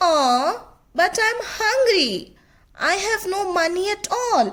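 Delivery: high, whining, pleading tone. Narrator reading a story gives a rabbit character's reply to a refusal, whining. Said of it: "Brer Rabbit, whining".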